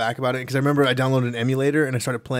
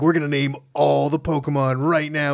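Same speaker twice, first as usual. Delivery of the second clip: movie-trailer narrator voice; 2 semitones higher than usual. Retelling how he announced renaming every Pokemon, in the Honest Trailers narrator voice. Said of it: "He says it in that like honest trailer's voice".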